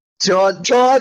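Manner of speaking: high-pitched screaming cry. Reacting in character as a player character does something rash: screaming. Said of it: "I'm screaming".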